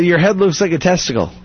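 plain

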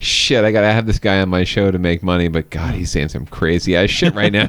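ordinary delivery

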